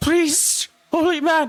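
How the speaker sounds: very high, loud ghostly wailing voice.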